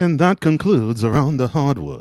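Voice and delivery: put-on British accent. Closing out the segment as a joke: put-on british accent. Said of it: "What's up with the British accent".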